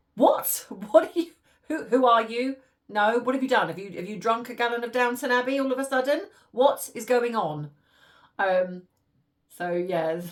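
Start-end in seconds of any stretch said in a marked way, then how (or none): 0.1-7.6 loud, mock bewildered, baffled delivery. Retelling how mum would react to hearing mama and papa: imitating mum's baffled reaction. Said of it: "she'd be like".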